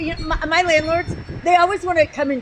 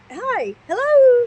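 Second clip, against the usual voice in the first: polite, higher mother voice; 8 semitones higher, 4 dB louder than usual. Retelling answering the phone as the kids heard it: PTA voice. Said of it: "P T A voice".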